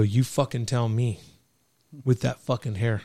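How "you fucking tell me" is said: ordinary delivery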